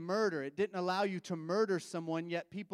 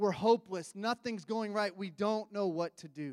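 ordinary delivery

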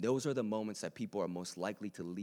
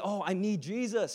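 easy, casual, breezy, very slow and drawn out; 12 semitones higher, 6 dB louder than usual. Speaking to a room, showing how they will say it, smiling while speaking. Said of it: "you're like smiling while you say it".

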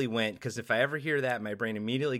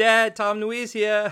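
put-on tiny baby voice, very high pitch, slow; 9 semitones higher, 7 dB louder than usual. Joking after mention of a smaller voice: Baby Boba voice. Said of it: "Baby Boba".

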